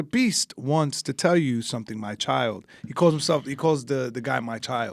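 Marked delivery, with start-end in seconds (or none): 0.0-2.7 eerie robotic voice. Speaker quotes a guy who talks in third person as his robot, imitating Beast, creepy robot. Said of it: "He goes like".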